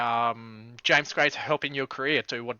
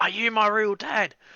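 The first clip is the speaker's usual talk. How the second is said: acted, high yell called out from afar; 8 semitones higher, 3 dB louder than usual. Retelling yelling a sign's question out to someone, retelling a yell. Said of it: "me just yelling out".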